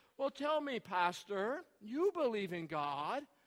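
slow, patronizing, talking-down condescending tone. Speaker mimicking how people on microphones and television question a pastor, mock condescending tone. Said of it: "we ask in the most condescending tone".

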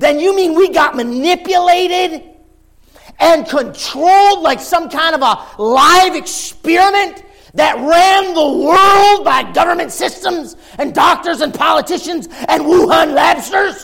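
high, loud sarcastic voice. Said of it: "You get my sarcasm".

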